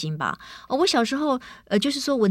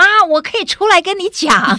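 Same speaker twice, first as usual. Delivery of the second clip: very loud, high-pitched yell; 8 semitones higher, 9 dB louder than usual. A mother retells her son yelling to her from another room, imitating his yell. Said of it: "他会大叫说".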